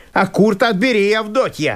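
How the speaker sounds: called out loudly. Narrating the landowner calling out to Avdotya, in a loud voice. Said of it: "прибавил он громким голосом".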